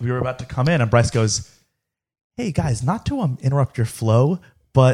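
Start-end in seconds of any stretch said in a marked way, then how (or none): 2.4-4.9 mock innocent, harmless-sounding put-on voice. Imitating a friend who interrupted before the podcast: imitating an innocent voice. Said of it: "that is the voice that he put on".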